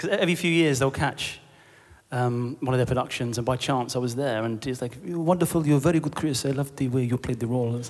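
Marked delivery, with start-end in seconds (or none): 5.0-7.8 terrible, clumsy, put-on French accent. Recalling a French visitor praising them backstage, in a terrible French accent. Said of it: "it's my terrible French impression".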